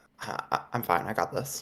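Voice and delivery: soft, hushed, breathy whisper in character voice. Voicing a character whispering back a reassurance. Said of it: "I'm gonna whisper ba-, back".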